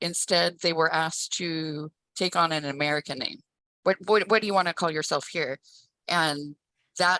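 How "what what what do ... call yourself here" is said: usual speaking voice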